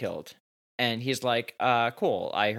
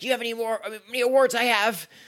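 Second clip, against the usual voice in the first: sharp, snappy, slow, pitched very high; 12 semitones higher, 4 dB louder than usual. Recapping a scene, speaker voices a character answering Logan's question: retelling her snapping. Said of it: "she snaps".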